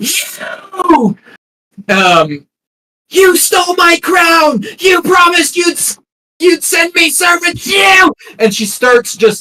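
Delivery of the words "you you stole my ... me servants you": very high, shrill, piercing screech. Voicing a woman slashed across the chest who turns on her attacker: screeching. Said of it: "she screeches at you".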